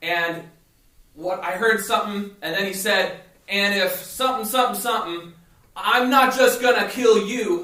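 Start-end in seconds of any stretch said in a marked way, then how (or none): 3.5-7.6 screaming, higher and louder. Retelling an angry fisherman's threat at the nets: imitating someone screaming. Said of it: "And he was screaming this".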